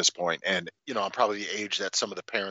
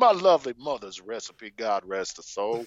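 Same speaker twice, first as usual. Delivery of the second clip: put-on courtly old-South gentleman accent; 3 semitones higher than usual. Continuing the joke bit as a parched southern gentleman wanting a drink. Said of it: "a simple Southern gentleman".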